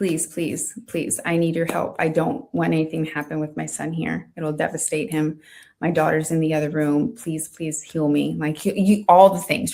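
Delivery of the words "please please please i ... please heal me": put-on desperate, pleading delivery. Retelling a prayer said while unable to move: retelling own pleading prayer. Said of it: "pleading with God".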